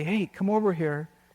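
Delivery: mock whispering. Retelling how some guy would call him over during exercise period, whispering. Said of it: "some guy would whisper to me".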